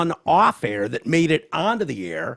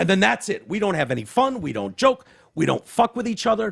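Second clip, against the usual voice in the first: plain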